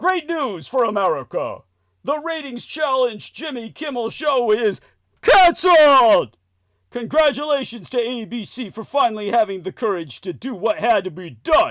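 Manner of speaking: very loud, all-out shouting. Reading aloud Trump's Truth Social post, shouting Trump impression. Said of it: "Let me read it the way Trump would say it".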